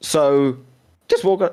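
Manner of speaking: voice cracking and breaking mid-phrase. Asking the other speaker to walk through the race, voice cracking. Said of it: "voice crack there".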